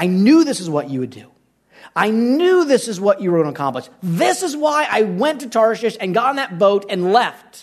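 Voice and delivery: rising, swooping pitch, full of disgust.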